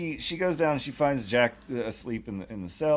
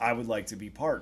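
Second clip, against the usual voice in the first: normal talking voice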